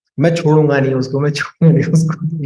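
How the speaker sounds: ordinary delivery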